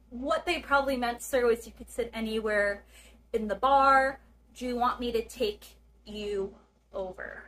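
ordinary delivery

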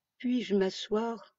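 timid, hesitant. The little prince asks the king whether he may sit down; timid. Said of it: "S'enquit timidement le petit prince".

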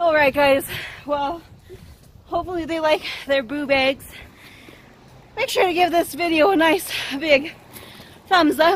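out of breath. Closing a video to viewers, out of breath. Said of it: "Because I'm out of breath".

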